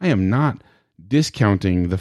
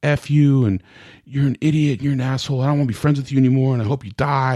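put-on high, angry, insulting tirade; 5 semitones higher than usual. Retelling how she got upset after you said it's all about control, imitating someone mad. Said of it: "got all mad at me".

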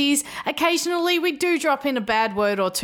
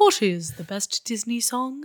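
terrible, slow, drawn-out cartoon voice. Show host asks the show's big question in a Winnie the Pooh voice. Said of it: "That was a terrible impression of Winnie the Pooh".

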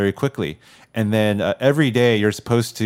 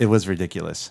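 ordinary delivery

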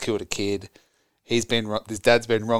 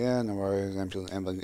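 play-acted indifferent, careless, offhand tone; 2 semitones lower, 7 dB quieter than usual. Retelling a film's emergency call scene, imitating an uncaring call taker. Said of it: "He doesn't care".

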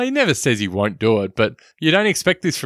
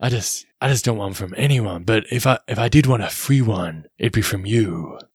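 gruff cowboy voice, put on. Retelling a character's line from a film scene in Clint Eastwood voice. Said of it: "your Clint Eastwood accent here".

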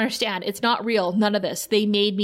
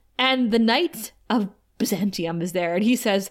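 ordinary talk

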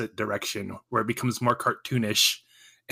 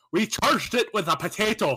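put-on Irish accent, pitched very high; 10 semitones higher than usual. Show hosts riff together in a shared accent bit, mock Irish accent. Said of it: "we're not all doing this accent".

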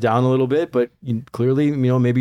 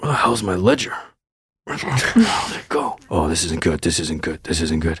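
muttering to himself aloud; 7 semitones lower than usual. Game master voices a man rummaging through his desk drawer, talking to himself. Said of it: "you just hear him talking to himself like".

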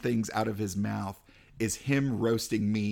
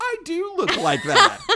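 blurted far too loudly, very high and shrill; 9 dB louder than usual. Retelling a roast, turning to the comedian beside him, retelling saying it too loud. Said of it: "too loud go".

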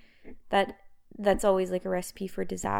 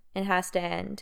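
ordinary delivery

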